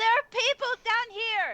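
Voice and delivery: very high, strident yelling shout. Playing Vita, a player shouts up from below, in a very strident shout. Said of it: "in a very strident voice".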